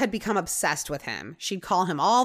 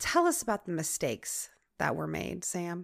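put-on calm voice, much quieter; 2 semitones lower, 7 dB quieter than usual. Retelling how Captain Johnson questioned Sam, imitating a calm voice. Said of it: "Just like real calm".

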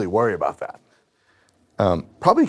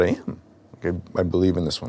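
ordinary talk

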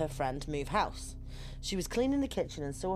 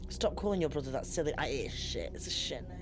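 usual speaking voice

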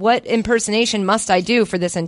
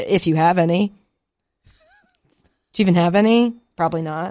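mock-sincere, swooping, sarcastic. Reading a sponsor script to the listener: sarcastic. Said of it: "You know it's sarcasm".

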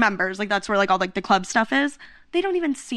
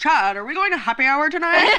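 pitched-up, airheaded, dopey frat-bro voice; 5 semitones higher, 3 dB louder than usual. Retelling what a group of guys were overheard saying, imitating how they talk. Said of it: "they actually talk like that".

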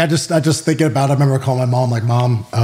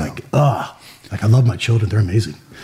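emotional, choked-up voice welling with feeling; 3 semitones lower than usual. A parent reflecting on missed years with their kids, choked up. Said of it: "Now I'm getting choked up".

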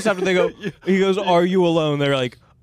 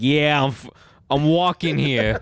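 put-on New York street accent; 5 semitones lower than usual. Acting out characters in a made-up scene, answering a question: New Yorker accent. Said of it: "New Yorker, eh?".

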